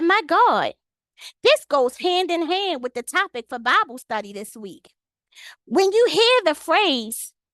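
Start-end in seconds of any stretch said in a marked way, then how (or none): none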